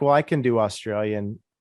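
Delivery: ordinary talk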